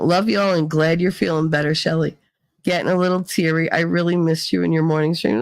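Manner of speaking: usual speaking voice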